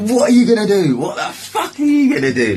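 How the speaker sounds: very high-pitched, rowdy, goading taunt. Retelling a fight, the speaker acts out taunting a man: retelling a rowdy taunt. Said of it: "I was probably getting rowdy".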